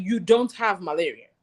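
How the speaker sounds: stern, strong, firm fatherly voice. Retelling dad denying the speaker has malaria, imitating dad's strong voice. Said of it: "His voice was actually strong".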